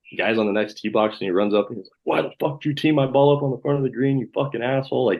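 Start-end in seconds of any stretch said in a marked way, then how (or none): 2.1-5.1 put-on enraged, furious, high-pitched screaming. Retelling an angry golfer confronting another player: imitating someone screaming. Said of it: "just screaming at him".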